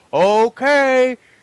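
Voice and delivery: very high, loud, drawn-out hype yell like a caster. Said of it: "Nick and Dan are, like, super hyped".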